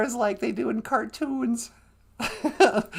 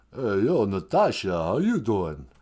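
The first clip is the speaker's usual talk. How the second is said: very low, dropped drawl. Playing a radio caller in a skit: Sylvester Stallone voice. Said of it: "hi, Sylvester Stallone".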